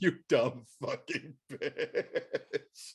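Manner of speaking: soft, put-on laughing, very slow and drawn out. Recounting a woman pointing at the speaker, retelling a laughing insult. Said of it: "she started laughing her ass off".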